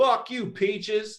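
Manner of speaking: very high, shrill, jeering shout, acted. Retelling what a man yelled from his truck: imitating someone yelling. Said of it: "yelled out of his truck".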